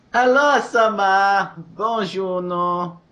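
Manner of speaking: very slow, high, drawn-out put-on French accent. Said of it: "he covers his voice that way".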